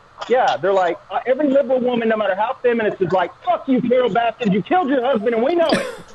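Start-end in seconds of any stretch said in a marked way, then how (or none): 3.4-5.9 play-acted, heated half-shout, mild ranting yell. Comedian acts out what liberal women say: retelling a yell. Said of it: "am I yelling?".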